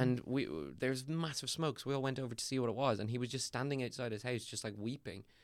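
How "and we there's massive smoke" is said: ordinary talk, nothing marked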